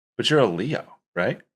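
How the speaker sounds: mock bewildered, confused and puzzled tone. Retelling a talk while driving with a lady: imitating someone sounding confused. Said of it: "she's all, like, confused and she goes".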